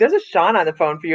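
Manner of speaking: usual speaking voice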